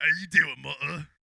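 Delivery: put-on Cockney accent. Asked for a Cockney voice, play Jason Statham greeting his mother, Cockney Jason Statham voice. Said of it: "give me a can Cockney voice".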